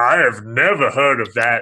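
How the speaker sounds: taunting, scornful, derisive, mocking tone. Retelling how bank staff answered a request for silver certificates, imitating a mocking tone. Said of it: "like in a mocking tone".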